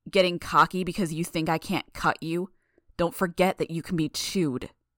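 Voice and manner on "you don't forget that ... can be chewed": ordinary delivery, nothing marked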